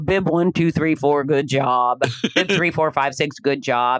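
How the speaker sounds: level, uninflected, flat monotone announcer drone. A race announcer imitates an older announcer reading a script, monotone race announcer. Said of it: "kind of monotone".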